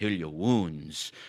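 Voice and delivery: slow, low-pitched voice with German accent.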